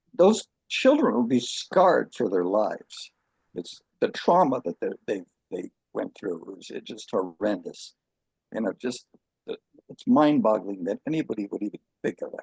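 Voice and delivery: voice on the verge of crying. Talking about children taken from their families, almost crying. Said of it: "I'm almost crying right now".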